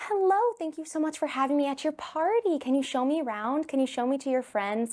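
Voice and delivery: gentle, sweet, high storybook princess voice. Asked how she greets kids as a princess, she demonstrates in a princess voice. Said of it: "You totally have the princess voice".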